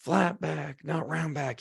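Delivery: put-on half-yelled scolding tone, rough and creaky. Retelling a trainer correcting a bent over row: imitating someone screaming very loud. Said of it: "He's screaming at me, crazy loud".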